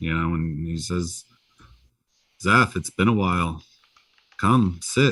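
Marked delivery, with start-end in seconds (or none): 2.4-5.1 very calm, serene, completely easy voice. Voicing a celestial elder who greets Zeph: calm Morgan Freeman-like voice. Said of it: "speaks to you in a very calm Morgan Freeman-like voice".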